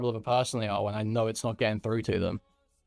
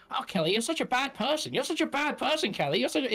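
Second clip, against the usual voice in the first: very high, insufferable, preachy tut-tutting scolding tone; 13 semitones higher than usual. Mocking how someone goes around scolding Kelly: mocking imitation of Relly scolding. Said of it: "just going around being like".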